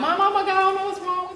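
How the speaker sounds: mock, very high, tearful, sobbing wail. Retelling a phone call to mom about a late cycle: retelling own crying call. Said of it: "still the same thing, crying".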